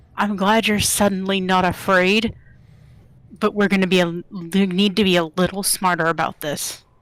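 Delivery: whispering in a put-on voice. Voicing Hawk holding a struggling character: Hawk whispering in character. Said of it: "Hawk's gonna whisper and be like".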